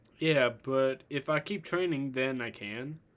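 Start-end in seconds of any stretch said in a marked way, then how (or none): none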